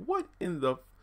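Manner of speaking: high, bewildered what-the reaction.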